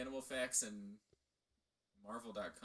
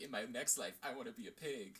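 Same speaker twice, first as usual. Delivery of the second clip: ordinary talk, nothing marked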